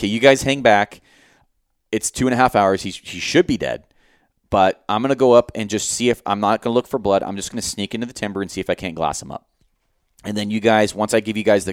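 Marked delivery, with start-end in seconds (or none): none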